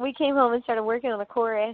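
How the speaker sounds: normal talking voice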